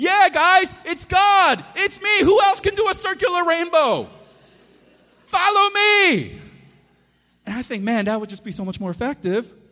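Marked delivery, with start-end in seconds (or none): 0.0-6.4 booming megaphone voice, very high pitched. Imagining God announcing himself after a circular rainbow, in a loud megaphone voice. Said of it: "in a loud megaphone voice".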